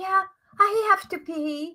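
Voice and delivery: high-pitched, loud, called-out lady's voice.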